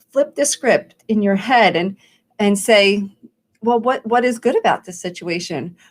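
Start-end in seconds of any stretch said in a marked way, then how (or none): none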